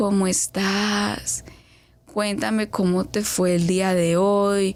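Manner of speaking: very slow, unhurried, drawn-out, stretched-out speech. Imitating a person who talks slowly, very slow speech. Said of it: "él por el contrario habla lento".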